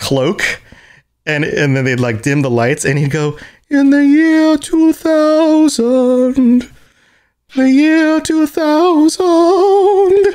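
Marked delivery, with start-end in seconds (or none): 3.7-10.2 much higher, louder, much slower, very high voice. Describing a comedy sketch, quoting a cloaked band member: very high voice. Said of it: "That's about as high as my voice can get".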